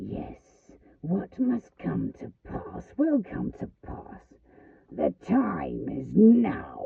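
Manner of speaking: loud, slow, rough rasping hiss. Narrator reads Worm's words to the boy after the fox speaks, hissing as Worm. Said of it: "and he hissed".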